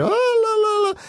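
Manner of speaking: very high pitch, each "la" drawn out long. Describing a voice actor in a movie he found wrong: Zach Braff high-pitched voice. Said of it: "his voice has always got that sort of high pitch".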